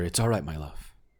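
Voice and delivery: soft whisper. Voicing a character who whispers to calm another: whispering. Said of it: "hear Amador kind of whisper".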